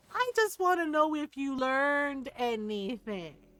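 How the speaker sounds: mild, even-tempered, calm and composed delivery. Retelling what the speaker's mom said to him: very quiet, calm. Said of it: "She just very quietly said it".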